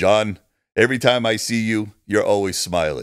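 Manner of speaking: put-on Austrian accent. Retelling a story from a film set, quoting Arnold: Arnold's Austrian accent. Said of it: "his Austrian accent and said".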